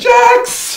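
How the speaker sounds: very high, loud yelling call.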